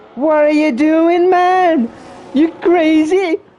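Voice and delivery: very high, very drawn-out put-on voice. Reacting to a pit stop, doing a Matthew Lillard impression. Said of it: "That's my Matthew Lillard impression".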